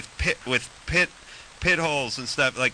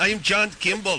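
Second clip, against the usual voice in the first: put-on thick Austrian accent; 6 semitones higher than usual. Complaining that Schwarzenegger drives you insane, quote his detective in a Schwarzenegger voice, thick Austrian accent. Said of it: "With the thick Austrian accent?".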